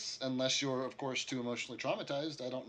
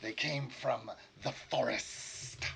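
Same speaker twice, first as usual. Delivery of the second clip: reptilian monster voice. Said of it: "His words sound different".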